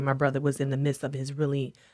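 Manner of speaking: normal talking voice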